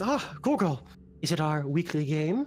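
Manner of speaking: dropped, deep, low-pitched character voice. Game master voicing a character who addresses another character: deep voice. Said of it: "And in a deep voice".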